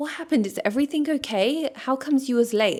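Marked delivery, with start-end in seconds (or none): 0.0-1.7 tender, caring, gentle feminine voice, pitched up. Showing how you're going to ask what happened, soft, feminine way. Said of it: "in a feminine way, in a soft way".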